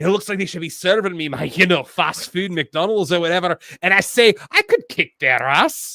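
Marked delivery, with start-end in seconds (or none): 3.8-6.0 fake, put-on Scottish accent. Describing other guys one could beat up: put-on scottish accent. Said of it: "That is my Scottish accent".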